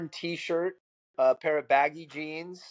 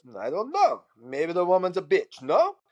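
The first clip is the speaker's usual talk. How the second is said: put-on Russian-accented speech. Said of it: "in this perfect Russian accent".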